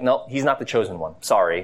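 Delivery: ordinary delivery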